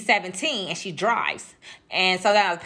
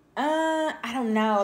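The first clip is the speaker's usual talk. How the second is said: acted-out reluctant, hedging, hesitant, unsure tone; 4 semitones higher than usual. Retelling a friend's answer to a shopping invitation: imitating a hesitant reply. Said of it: "she was real hesitant".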